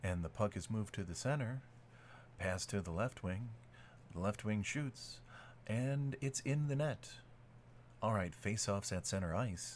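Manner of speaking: low, flat, dead-level monotone drone. Imitating a monotone guy calling a hockey play, flat monotone. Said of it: "you would have to have the most monotone guy".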